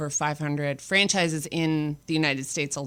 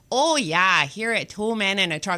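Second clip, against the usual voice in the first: put-on Michigan accent; 4 semitones higher than usual. Retelling the voice in online training videos: imitating a Michigan accent. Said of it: "the accent is, like, etched in my brain".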